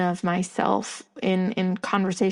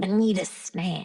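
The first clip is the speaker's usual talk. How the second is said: put-on childlike, childish-sounding voice. Showing how the childlike version of themselves talks, childlike voice. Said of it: "the childlike version of me is".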